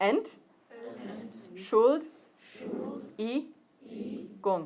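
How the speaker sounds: hushed, very slow, one syllable at a time. Breaking a German word down for learners, saying it slowly, syllable by syllable. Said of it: "we'll say it slowly first".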